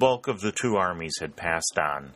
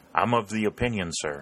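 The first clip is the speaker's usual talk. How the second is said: ordinary delivery, nothing marked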